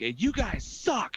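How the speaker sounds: play-acted, very high, slow, drawn-out irate griping. Retelling a voicemail from the resident: imitating an angry caller. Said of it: "we get an angry voicemail".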